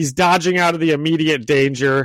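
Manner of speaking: plain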